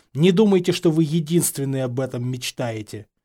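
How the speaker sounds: ordinary delivery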